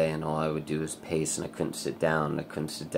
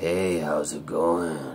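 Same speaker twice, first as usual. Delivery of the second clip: put-on slow, mature older man's voice; 5 dB louder than usual. Retelling a voice heard coming from the ceiling, in an older person's voice. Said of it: "kind of like an older person's voice".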